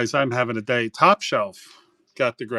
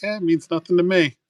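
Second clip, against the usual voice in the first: raised-pitch female voice; 6 semitones higher than usual.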